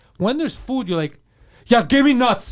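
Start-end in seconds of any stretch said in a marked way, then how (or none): 1.7-2.6 loud, pushy, aggressive, demanding delivery. Teasing a friend about how he asks for food: mock-aggressive demand. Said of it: "You ask aggressively".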